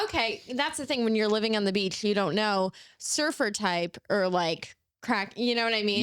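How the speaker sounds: plain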